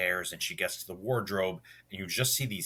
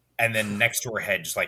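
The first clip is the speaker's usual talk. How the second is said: ordinary delivery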